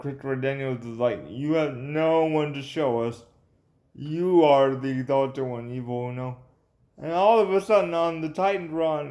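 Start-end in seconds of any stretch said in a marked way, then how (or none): none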